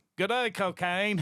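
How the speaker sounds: botched put-on Australian accent. Joking about someone being Australian, using a put-on Australian accent. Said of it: "I'm doing the total wrong accent".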